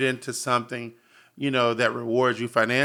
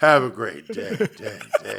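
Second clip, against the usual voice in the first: deep, low, swooping voice repeating into echo; 4 semitones lower than usual. Imitating the other speaker's low voice from his videos: imitating his low phone voice. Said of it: "why are we hearing on the lows and his voice".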